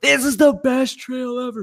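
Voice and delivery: excited shout. Retelling how a patron yelled riding down the trail: imitating Jody yelling. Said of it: "I just heard him yelling".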